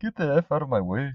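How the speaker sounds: cheesy put-on Indian accent. Acting out a scene where he punches someone, put-on Indian accent. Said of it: "How come all your accents always end up Indian?".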